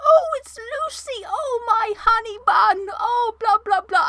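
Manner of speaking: put-on very high, slow old grandma voice. Imitating how a grandma talks when greeted by Lucy, in old grandma voice. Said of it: "I'll give you a little taste of the grandma voice".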